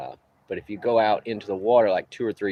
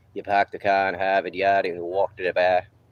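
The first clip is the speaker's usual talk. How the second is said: put-on Boston accent; 3 dB louder than usual. Showing the accent Mama loves to hear, in a Boston accent. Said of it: "My Boston accent".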